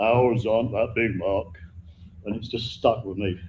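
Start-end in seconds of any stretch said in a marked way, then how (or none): 0.0-1.5 deep low-pitched voice. Retelling what a friend from the Midlands said to him, imitating the friend's very deep voice. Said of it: "who has a very deep voice like this".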